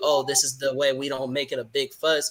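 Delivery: ordinary delivery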